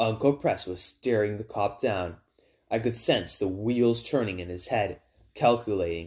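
ordinary delivery

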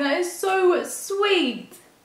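tearful crying voice. Reacting to a gift handmade with love for [name], crying. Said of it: "I'm actually crying".

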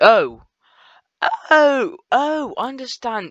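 voice suddenly breaking and cracking, high and swooping. Suddenly understanding a confusing game menu, voice cracking. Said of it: "my voice just cracked".

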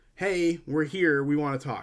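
normal talking voice

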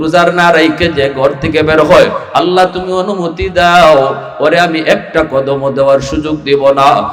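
low, pleading, begging voice.

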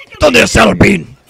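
put-on Spanish-accented superhero voice.

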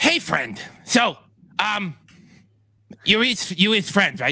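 slow, unhurried, high lizard-creature voice. Voicing lizard dragonkin greeting a friend who fed them: lizard dragonkin voice. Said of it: "they've said".

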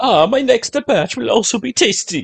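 put-on Italian accent, chef character voice. Suggesting a chef character to a fellow player, voicing him with an italian chef accent. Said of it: "He's got an Italian".

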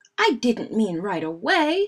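foot-stamping outburst. Brother answers Fred, who borrowed and bent his new bike, stamping his feet. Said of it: "stamping his feet".

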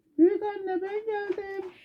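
thinned-out, very high, false, disguised voice. Narrating the fairy tale, the wolf arrives at grandmother's house: thinned disguised voice. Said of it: "Sesini incelterek".

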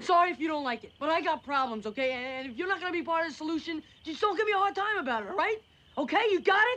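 furious heated rant. Telling someone off for giving a hard time: angry. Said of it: "Whoa, so angry".

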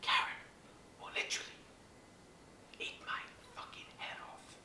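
soft, hushed nature-documentary style whisper.

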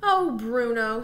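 fed up, exasperated. Gretel says bruno's name to him, exasperated. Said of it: "said Gretel in an exasperated voice".

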